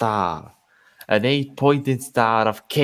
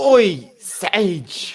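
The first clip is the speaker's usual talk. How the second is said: loud, high-pitched shout; 9 semitones higher, 5 dB louder than usual. Voicing a dwarf leader calling to another: shouting. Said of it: "Cregan shouted at Cato".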